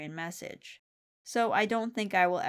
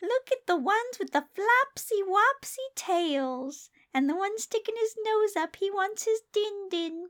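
put-on very high, gushing baby talk, word ends drawn out; 13 semitones higher, 4 dB louder than usual. Narrating Susan admiring Lucy's goldfish to keep up her charade, in Susan's baby talk. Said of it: "Stop your baby talk".

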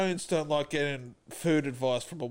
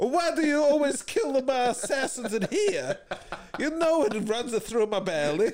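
put-on Italian accent; 9 semitones higher than usual. In a comedy bit as a mafia boss complaining about his assassins, Italian stereotype accent. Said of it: "is more Italian stereotype voices".

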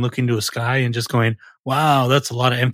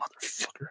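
very soft, whispered mutter under the breath. Retelling cursing at a video game: imitating a muttered curse. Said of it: "I'll mutter under my breath".

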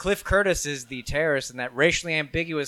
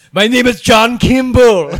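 put-on bellowing, very loud, thick Austrian accent; 8 semitones higher, 13 dB louder than usual. Mocking Arnold movie characters who claim to be American, in a thick Austrian accent. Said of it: "you have a very thick Austrian accent".

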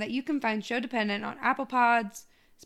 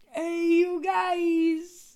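fake, pitched-up New York accent; 7 semitones higher than usual. Repeating the greeting to the group in a put-on New York-ish accent. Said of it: "Was that like New York?".

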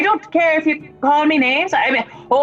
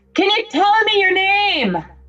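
acted-out, high, loud, raised call-out; 5 semitones higher than usual. Voicing a character calling to a fleeing girl: yelling out. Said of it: "I yell out to her".

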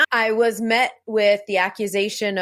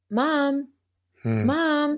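acted frightened, high, swooping call; 5 semitones higher than usual. A mother recalls hearing her daughter at the top of the stairs, imitating a scared child. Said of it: "A scared voice that I never heard before".

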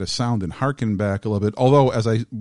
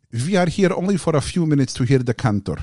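put-on thick, heavy foreign accent; 5 semitones higher than usual. Retelling what Orthodox men in prayer shawls said, heavily accented English. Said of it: "heavily accented English".

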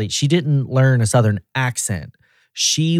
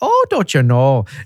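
put-on Minnesota accent with long o's in know; 3 dB louder than usual. Imitating how she greets someone walking in the door: imitating a minnesota accent with long o's. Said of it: "she'll occasionally get the long O's".

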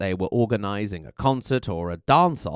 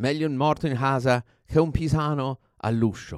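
bad, appalling put-on Florentine Italian accent; 3 semitones higher than usual. Quoting a tour guide's Italian proverb: bad Florentine accent. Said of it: "forgive my appalling Florentine accent".

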